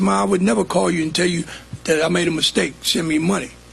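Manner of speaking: normal talking voice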